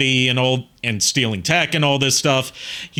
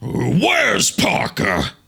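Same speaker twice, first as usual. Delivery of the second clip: rough, creaky, swooping, animated creature voice; 5 semitones higher than usual. Showing an audition voice for Agent Venom. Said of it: "I did it based on Darren Norris".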